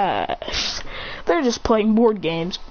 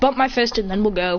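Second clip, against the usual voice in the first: ordinary talk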